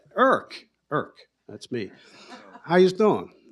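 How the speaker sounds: put-on easy, relaxed Philadelphia accent. Retelling how a man hugs and greets the speaker on coming home: Philly accent. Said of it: "he still had the Philly accent".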